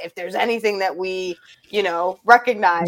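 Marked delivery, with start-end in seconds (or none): none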